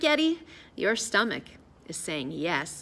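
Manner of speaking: plain reading voice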